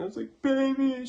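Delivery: sobbing, pitched way up. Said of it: "I was, like, crying".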